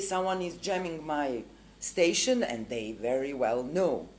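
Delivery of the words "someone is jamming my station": ordinary delivery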